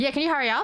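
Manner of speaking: mocking rude tone. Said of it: "You don't speak to someone that way".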